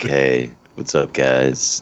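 very slow, low, sultry, sexy, sleepy tired drawl. Teasing Markellis about how he sounds when tired, imitating Markellis's sexier tired voice. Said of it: "all of a sudden your voice gets sexier".

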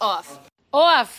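Long Island accent and way of speaking. Talking about dancing and your tours, let out a word in your Long Island accent. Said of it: "My Long Island accent".

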